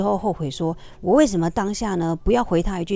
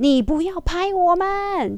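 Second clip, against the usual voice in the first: very high, slow, drawn-out shout; 11 semitones higher than usual. Recounting a man suddenly yelling at the speaker over taking a photo, retelling a loud yell. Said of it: "用吼的哦，".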